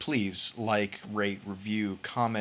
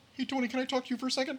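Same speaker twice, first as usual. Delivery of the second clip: very high, froggy puppet voice; 3 dB quieter than usual. Retelling a bit where Miss Piggy flirted with Cesaro, doing a Kermit the Frog voice. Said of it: "I was doing my Kermit the Frog".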